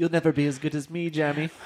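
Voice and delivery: put-on fancy French manner. Playing a rich rival taunting someone: fancy French-sounding voice. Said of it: "Was that a France fancy way to say".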